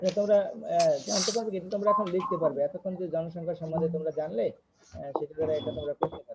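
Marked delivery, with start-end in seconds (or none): 4.9-6.4 fading much softer and lower, almost out. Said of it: "sir, একটু জোরে কথা বলেন".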